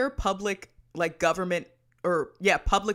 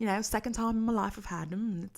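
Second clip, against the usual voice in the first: put-on posh British accent, fading away; 5 dB quieter than usual. Chatting about having been very sick, in a fading put-on posh British accent. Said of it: "sorry, the accent's going away".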